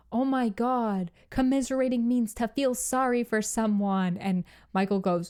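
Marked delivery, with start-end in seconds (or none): 0.1-4.1 put-on shout, higher. Retelling someone correcting another person's grammar: imitating a shout. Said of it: "Rob just shouts".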